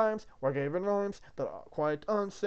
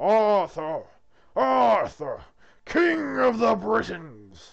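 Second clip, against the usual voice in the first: resounding, very loud, booming divine voice; 3 semitones higher, 9 dB louder than usual. A narrator voices a holy voice calling out to Arthur, booming holy voice. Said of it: "A holy voice booms out".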